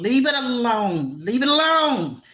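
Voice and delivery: all-out loud, high-pitched yelling, said twice. Mid-talk, the speaker repeats the words before apologizing, yelling. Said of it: "Sorry for yelling".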